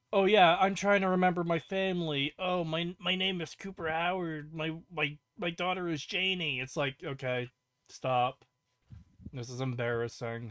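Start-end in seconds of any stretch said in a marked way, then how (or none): 0.1-6.6 syrupy, sappy, tearjerking emotional pleading tone. Mocking a character's line as emotional manipulation: mock emotional pleading. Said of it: "emotional, uh, manipulation when you have him being like".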